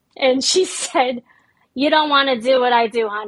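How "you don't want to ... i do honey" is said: put-on thick New York accent. Retelling what a staffing-agency recruiter said, the speaker uses the thickest New York accent. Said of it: "said it in like the thickest New York accent ever".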